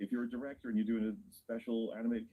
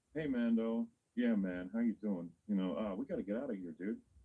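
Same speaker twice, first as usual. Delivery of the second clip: laid-back dude voice. Comparing Jabba's voice with his son's, imitating Rota's casual dude voice. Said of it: "Rota's is like".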